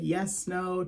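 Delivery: put-on sarcastic, playful tone. Retelling a film character's answer to a question: imitating a sarcastic, playful reply. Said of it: "sarcastic, like, playful response".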